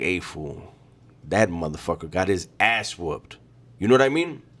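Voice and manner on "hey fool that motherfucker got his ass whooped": hushed, half-whispered talk. Retelling what other dudes on the yard half-whisper: imitating dudes half-whispering. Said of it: "dudes on the yard whispering like".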